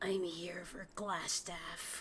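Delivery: controlled, reined-in, even and measured delivery. A player's character shifts her demeanor and speaks: lowered voice. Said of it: "kind of like lowers her voice".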